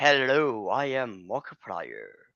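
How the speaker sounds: slow, smooth, drawling radio-announcer voice. Explaining why fans go to Markiplier, doing Markiplier radio voice. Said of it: "also the radio voice. I guess like".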